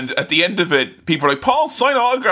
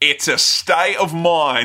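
fake, deliberately poorly done Australian accent. Speaker makes a deliberately bad joke to another speaker, in a bad Australian accent. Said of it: "I was deliberately doing a bad one for a bad joke".

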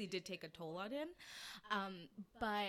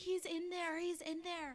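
very high, shrill, drawn-out screaming; 9 semitones higher, 4 dB louder than usual. Telling a family story, acting out what Alexander said, imitating Alexander screaming. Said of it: "Alexander's just like screaming".

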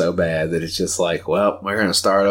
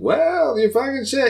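put-on sarcastic comedian voice, higher. Describing a comedian's tone to another speaker: sarcastic Mark Normand impression. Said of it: "he's got a really kinda sarcastic tone".

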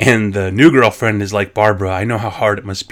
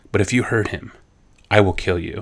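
quieter, put-on, mock-stern serious voice; 5 dB quieter than usual. Speaker retells Barbara warning a new girlfriend; imitating Barbara getting serious. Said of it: "Barbara gets real serious and looks at her and goes".

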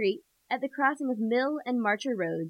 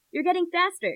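amused chuckle through words, pitched up; 6 semitones higher than usual. Reading his line as he shakes off the narrator's grip, chuckling. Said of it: "he chuckles".

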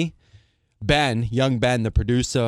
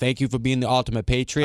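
usual speaking voice

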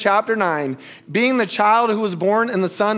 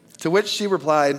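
plain

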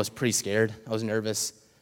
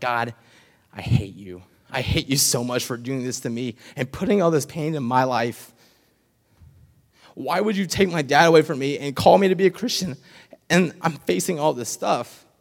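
acted-out, tearful, crying outburst; 4 semitones higher than usual. Recalling praying alone in their room at sixteen after losing their dad, retelling crying prayer. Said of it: "getting on my hands and knees and crying".

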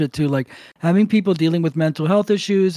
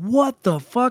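high-pitched, enraged, mock furious outburst of disbelief; 6 semitones higher than usual. Retelling the other guy's reaction: imitating an enraged outburst. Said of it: "He loses his mind".

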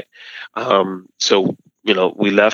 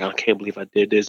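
mock tearful voice, quieter; 4 dB quieter than usual. Retelling a friend's call about nearly missing her flight, imitating someone crying. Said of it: "she was crying and just".

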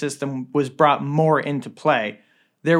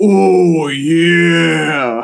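very loud, booming cry, belted, last word stretched; 2 semitones higher, 9 dB louder than usual. The narrator voices the boss running out at the group, Kool-Aid Man voice. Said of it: "Before you did that voice".

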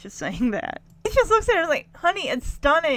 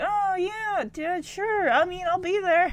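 sad, higher, forced-smile cheerful tone; 8 semitones higher than usual. Retelling a disappointed son answering his dad: imitating Ricky's sad forced smile. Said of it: "a sad smile".

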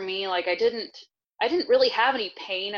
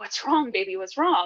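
put-on frightened voice, cracking with fear. Recalling her husband finding her on the bathroom floor, retelling a fear-cracked voice. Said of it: "I've never heard his voice crack like that".

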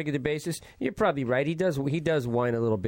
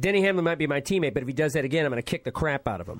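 ordinary delivery

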